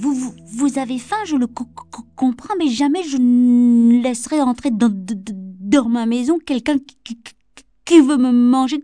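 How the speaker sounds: frightened stammer. The frightened second little pig answers the hungry wolf at the door, stammering in fear. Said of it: "répondit en bégayant".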